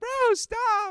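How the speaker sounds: put-on very high little-kid voice. Retelling how a teased teammate answered back, imitating Huggies' childlike voice. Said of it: "he just sounded like a straight child".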